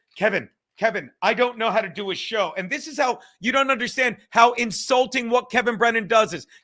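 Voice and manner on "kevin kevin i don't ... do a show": frantic, flustered, hurried-sounding delivery. Mocking a story that a caller phoned in a panic: imitating frantic Anthony Cumia. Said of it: "frantically said".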